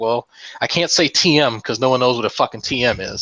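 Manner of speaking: ordinary talk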